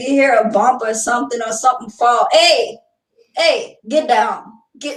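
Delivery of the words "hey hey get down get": slow, firm fatherly voice. Imitating how a dad reacts to a noise: imitating my dad. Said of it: "That's how my dad was".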